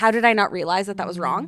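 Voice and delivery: ordinary delivery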